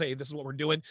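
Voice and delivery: ordinary talk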